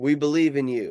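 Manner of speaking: put-on screaming call at full cry, projected far. Describing an imagined bridge where loved ones call out: imitating people screaming. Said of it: "They're screaming".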